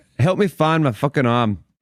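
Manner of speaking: high-pitched loud hollering. Playing a character who yells at the other two, yelling. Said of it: "I yell at the other two".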